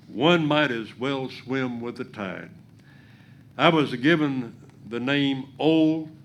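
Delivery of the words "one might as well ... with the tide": plain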